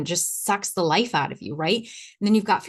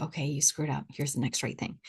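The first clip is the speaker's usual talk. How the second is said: calm, wise, gentle, soft, still inner voice; 4 semitones lower, 7 dB quieter than usual. A speaker voices their wise inner knowing, soft, still inner voice. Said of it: "the one that's wise and still and soft".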